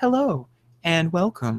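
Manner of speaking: calm, gentle, soothing female voice. Describing a relaxation recording's two voices, speaker imitates its greeting: soothing female voice. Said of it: "I'm trying to do a fem- soothing female voice".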